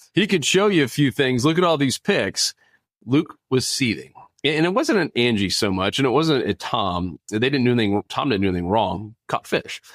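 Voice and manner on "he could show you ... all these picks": teasing, mildly snide, lightly sarcastic, pitched up. Retelling a coworker's remark in front of the group: imitating a sarcastic jab. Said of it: "a little bit sarcastically".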